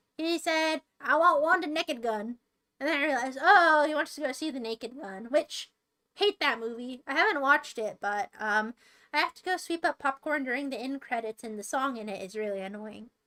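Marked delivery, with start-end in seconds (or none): 1.0-2.4 put-on strong Texas accent. Retelling a customer at the cinema counter: imitating a strong texas accent. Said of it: "he just said it really like that".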